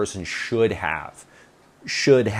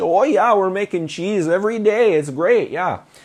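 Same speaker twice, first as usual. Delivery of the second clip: put-on northern US accent with raised pitch; 8 semitones higher, 4 dB louder than usual. Retelling what girls at a show said about making cheese: imitating a northern US accent. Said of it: "as you can tell, I love the northern accent".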